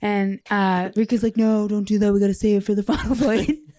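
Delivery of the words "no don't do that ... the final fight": put-on dopey teenager voice. Retelling a game scene, the speaker does Riku as a dopey skateboarding teenager. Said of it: "like a dopey skateboarding teenager".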